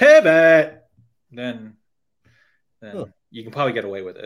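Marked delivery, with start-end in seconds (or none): 0.0-0.8 high, very loud screaming. Showing how to say the word from Friends: screaming pivot like Ross. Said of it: "You got to scream it like Ross did in Friends".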